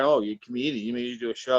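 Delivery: plain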